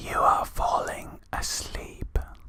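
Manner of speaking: soft, breathy, hushed, lulling close ASMR whisper. Mocking relaxing sleep videos while chatting with a friend: mock asmr whisper. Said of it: "the ones that whisper in your ear".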